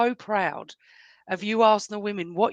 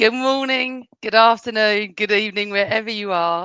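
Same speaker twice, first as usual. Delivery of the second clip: loud, broken up by laughter; 6 dB louder than usual. Greeting listeners at the start of the podcast, laughing while talking. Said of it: "I'm sorry I'm laughing".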